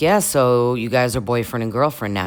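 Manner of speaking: normal talking voice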